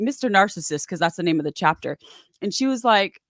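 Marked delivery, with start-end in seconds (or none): none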